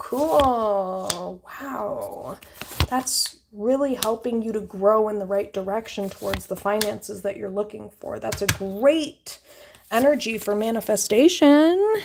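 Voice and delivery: sarcastic, hollow fake enthusiasm with drawn-out cool. Reading tarot cards aloud, the speaker comments on the spread; sarcastic. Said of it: "I'm being sarcastic".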